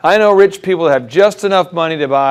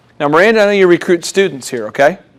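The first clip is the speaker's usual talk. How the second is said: normal talking voice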